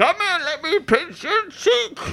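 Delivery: very high-pitched, aged, sinister villain voice. Joking with others about a ninety-year-old version of a villain: old Bane voice. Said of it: "Old Bane".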